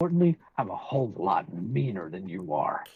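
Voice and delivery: brooding, low, menacing masked-vigilante voice. Speaking to another person on the stream in a Batman voice. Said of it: "what's with the Batman voice?".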